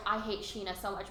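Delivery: ordinary talk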